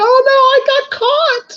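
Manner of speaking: acted-out, very high screaming shriek. Retelling a favorite movie moment to James: retelling a shriek. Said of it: "he shrieks and screaming too".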